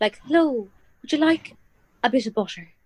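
exaggerated stage Irish accent, American style. Comparing accents with others, demonstrating an irish accent as americans do it. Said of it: "the Irish version of the American accent".

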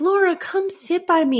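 very high, creepy, fake-nice, sweet and eerie voice. Retelling the scene, Nellie invites Laura to sit, in a weird Hannibal-Lecter-nice voice. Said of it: "she does this really weird voice".

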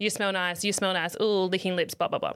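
plain

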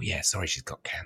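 mock whisper. Imitating how people talk when somebody is really ill: imitating people whispering. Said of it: "everyone starts whispering and starts going".

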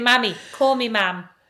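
ordinary talk

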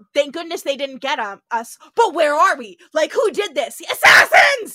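very loud, high, frantic freaking-out panic. Retelling a scene where a time traveler panics, imitating McCoy freaking out. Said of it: "He's freaking out".

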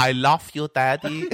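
put-on elderly female Persian accent. Describing a daughter's early english, the speaker quotes her in an old persian woman accent. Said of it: "she sounded like an 80-year-old Persian woman".

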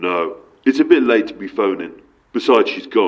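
rough, growled, gruff barking man's voice. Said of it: "answered by a man with a gruff voice".

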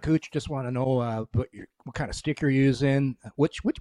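ordinary talk, nothing marked

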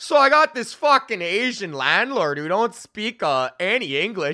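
put-on Saskatchewan accent with a stand-up comic patter. Retelling a comedian's joke, imitating Braden's Saskatchewan accent. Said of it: "his Saskatchewan accent being like".

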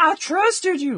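mock very high, loud shout with southern accent. Retelling a game scene where one character yells at another: imitating someone yelling. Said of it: "fucking Jason yelling at Bruce".

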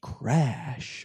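whispered, breathy, clumsy, badly put-on voice. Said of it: "that's my impression of... Of [name]".

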